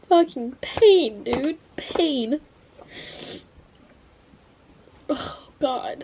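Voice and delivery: crying while talking. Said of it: "while I'm sitting here crying".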